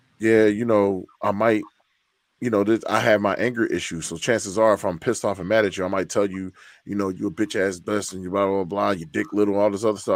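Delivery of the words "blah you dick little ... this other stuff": ordinary talk, nothing marked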